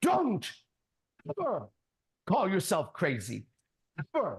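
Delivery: bellow, hit hard, pitch swinging wide. Retelling how a man in class shouted at him: retelling a bellow. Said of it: "He bellowed".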